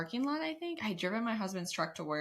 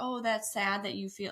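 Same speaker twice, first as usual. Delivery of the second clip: ordinary delivery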